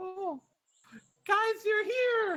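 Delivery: very high, squeaky, tiny bunny voice. Storyteller voicing a tiny bunny greeting the adventurers: tiny bunny creature voice. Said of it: "a little tiny bipedal like bunny kind of pokes his head out and he goes".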